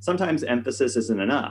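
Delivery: ordinary talk, nothing marked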